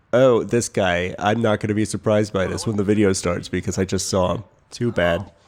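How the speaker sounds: ordinary talk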